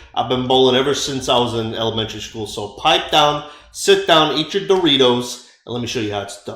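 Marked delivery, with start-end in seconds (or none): none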